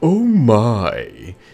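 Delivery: loud oh my, with my drawn out. Recounting doing a voice at the store, George Takei voice. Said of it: "I was doing George Takei's voice, and I was doing the".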